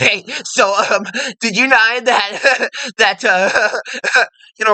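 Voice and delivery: chuckling through every word, talking through laughter. Showing listeners how an asshole talks, laughing while talking. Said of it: "you laugh at every opportunity you get ... kind of like this".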